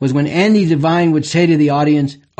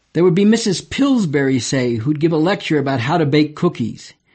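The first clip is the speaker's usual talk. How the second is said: normal talking voice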